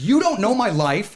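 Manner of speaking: shrill, very loud, high-pitched screamed outburst. Retelling screaming at a guy in a cab: imitating own past screaming. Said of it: "now I'm screaming at this guy".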